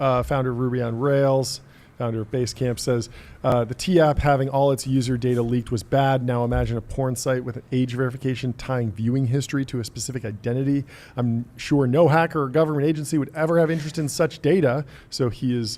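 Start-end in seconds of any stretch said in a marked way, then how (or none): none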